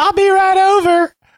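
put-on very high-pitched Southern belle accent. Acting out a phone call from Jonah Nolan, answering in Denise Tate's Southern belle accent. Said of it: "that's why I came up with that accent".

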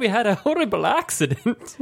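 high, mock Irish accent. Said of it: "Do it in an Irish accent".

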